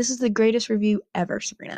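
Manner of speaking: normal talking voice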